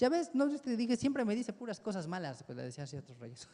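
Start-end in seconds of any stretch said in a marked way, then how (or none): 0.0-2.4 mocking, put-upon sarcastic grumble, pitched up. Retelling what a king said about the prophet: imitating a sarcastic complaint. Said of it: "ya hasta le decían con sarcasmo".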